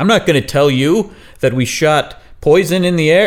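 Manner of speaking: full-throated, high-pitched yelled outburst. Retelling what a man yelled when asked what was going on, retelling a yell. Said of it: "He's yelling this".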